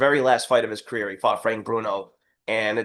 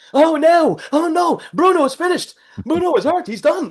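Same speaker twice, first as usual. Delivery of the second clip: mock frantic, very high, excited fight-announcer yelling; 7 dB louder than usual. Speaker imitates British announcers reacting to Bruno getting hurt, yelling excitedly. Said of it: "they started yelling like".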